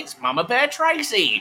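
high, sweeping announcer voice.

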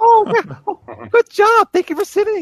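very high, loud, squeaky, swooping cartoon voice. Speaker shows how they praise the dogs, in a Mickey Mouse voice. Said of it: "I talk in my Mickey Mouse voice".

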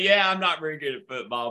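speech interrupted by laughter throughout. Acting out a baseball player handed a football: laughing while saying it. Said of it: "and even laugh and say".

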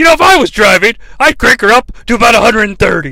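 cheered-up, perky, cheerful commentary. Retelling a wrestling commentator's next line, imitating Bobby Heenan cheering up. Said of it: "cheers up".

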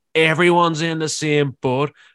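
put-on Northern Irish accent. Retelling what a woman said in a dispute over a seat, imitating a northern irish accent. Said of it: "so it's enjoyable to do her accent".

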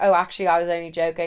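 ordinary talk

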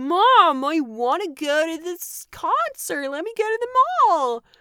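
put-on loud, slow, thick California accent drawl. Retelling how Andrea talked to her mom: Andrea's thick California accent. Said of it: "They all spoke with like this really thick, like, California accent".

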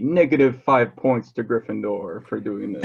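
ordinary talk, nothing marked

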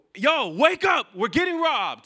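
very high, loud shout. Speaker retells waking someone up during a robbery, retelling a shout. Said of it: "And then I shout".

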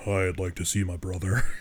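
intense, deep, low voice. Speaker describes a character at a mental hospital, in intense deep Holly voice. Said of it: "Intense, deep voice".

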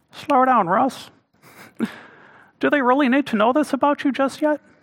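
high cartoon frog puppet voice. Voicing the little inner voice heard on first dates: Kermit the Frog voice. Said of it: "Sometimes it sounded like Kermit the Frog".

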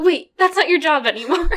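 mock loud, flustered, frazzled outburst. Retelling Mister Bong correcting himself: imitating flustered Mister Bong. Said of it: "he's just so flustered".

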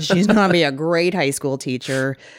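openly sarcastic, heavy on the irony. Quoting a coworker's remark about a colleague, imitating the coworker's sarcasm. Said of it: "You should hear the sarcasm on this one".

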